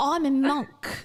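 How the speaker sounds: put-on sort-of-British accent. Mocking a self-help figure by imitating Jay's accent. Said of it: "Your accent is better than Jay's accent".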